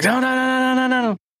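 high, panicked, squealing voice. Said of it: "She was like".

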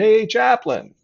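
very high, loud yell. Retelling a police sergeant calling across the street: imitating someone yelling. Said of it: "he yelled across the street".

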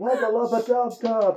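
shrill, very high-pitched yell, as from afar. In a game, someone yells from inside the bar: yelling. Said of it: "Someone yells from inside the bar".

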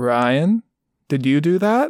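very slow, drawn-out scolding tone. Retelling a show scene, quoting a character's line: imitating Homelander scolding like a parent. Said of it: "in, like, a parent almost scolding their child voice".

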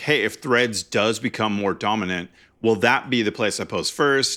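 ordinary talk

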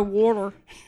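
high, fast put-on Philadelphia accent.

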